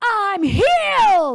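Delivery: loud high-pitched screaming.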